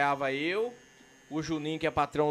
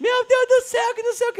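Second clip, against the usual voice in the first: shrill, very high, very loud screaming; 9 dB louder than usual. Retelling waking up in hospital after a crash: imitating mother yelling. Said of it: "Escutei minha mãe gritando".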